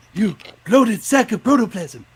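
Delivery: very high, very loud, shrill cartoon screech. Asked for a Ren voice, insulting Stimpy: Ren voice. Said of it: "Can you do Ren's voice?".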